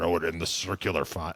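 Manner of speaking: croaky frog-like put-on voice. Retelling what the gym teacher said to a late student: imitating Mister Bell's frog voice. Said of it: "he sounded like a frog".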